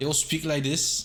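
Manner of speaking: clumsy, bad put-on Scottish brogue. Describing a game where everybody is Scottish: bad Scottish accent. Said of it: "And everybody's Scottish".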